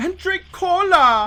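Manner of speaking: put-on playful childish voice. Speaker tries again to reach more childish whimsy, in a childish, whimsical voice. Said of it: "How high did I get?".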